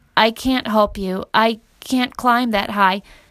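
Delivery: plain reading voice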